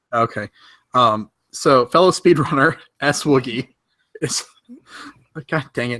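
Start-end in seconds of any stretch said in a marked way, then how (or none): 1.5-6.0 giggly speech breaking up, laughing through words. Introducing a fellow speedrunner to another speaker, laughing while talking. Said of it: "now I'm laughing".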